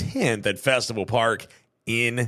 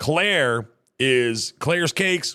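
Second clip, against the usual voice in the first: normal talking voice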